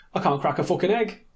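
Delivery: put-on rapid speech in a Manchester accent. Giving a quick quote to break up the horror: Tommy accent. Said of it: "Good accent".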